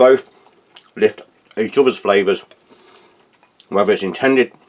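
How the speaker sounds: talking with mouth full of food. Praising a food pairing while eating, talking with mouth full. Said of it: "excuse me, speaking of a mouthful".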